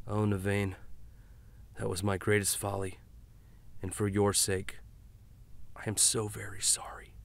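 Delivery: hushed, soft, sorrowful, grieving whisper. Narrator reading a master's apology to a wounded young man, whispered. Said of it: "[name] said as he calmly continued to twist the dagger. / The master sat some distance away, / [name] whispered".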